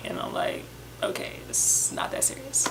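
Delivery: soft, voiceless whisper under the breath.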